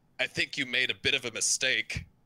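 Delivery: high voice, called back over the shoulder. Narrating as the party runs, the game master has Ismark shouting over his shoulder. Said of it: "Ismark kind of shouts over his shoulder".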